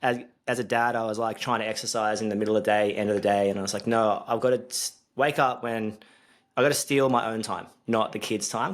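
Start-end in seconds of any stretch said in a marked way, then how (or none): none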